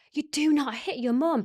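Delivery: loud, stretched-out shouting. Speaker recalling what they shouted at him, retelling a loud shout. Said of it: "And I shouted it so loud".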